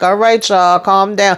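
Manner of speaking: plain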